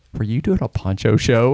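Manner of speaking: ordinary talk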